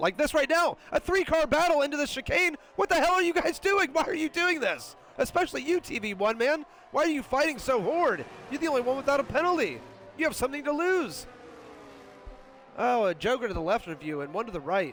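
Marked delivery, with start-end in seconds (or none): 0.9-11.3 very high, worked-up, excited race-announcer yelling. A commentator yells about a three-car battle into the chicane: excited yelling. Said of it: "and I want to yell about it".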